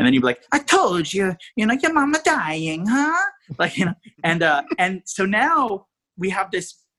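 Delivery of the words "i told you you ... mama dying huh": fake Italian accent, pitched up. Retelling a clown scene after the director demanded an accent: put-on Italian accent. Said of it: "but have an Italian accent".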